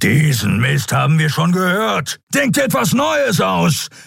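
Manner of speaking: furious lionlike roar, high and rising. Narrator reads Keru answering Kai, whom he holds in a grip; roaring. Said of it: "Keru stieß ein löwenhaftes Brüllen aus".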